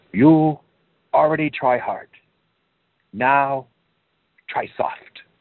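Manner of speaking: put-on high, heavy Chinese accent. Quote the 89-year-old man who would walk over and speak to Bruce, in a thick Chinese accent. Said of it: "in a thick Chinese accent".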